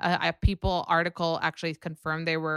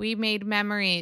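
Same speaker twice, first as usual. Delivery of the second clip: put-on robotic voice, pitched higher; 3 semitones higher than usual. Mocking a reality star by imitating her as a robot: robotic Kylie impression. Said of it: "She's a robot".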